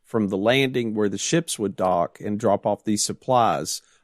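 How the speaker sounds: ordinary delivery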